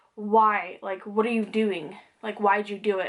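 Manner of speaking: imitated angry tone. Retelling a dream of talking with dad: retelling angry words. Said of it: "And I was mad at him".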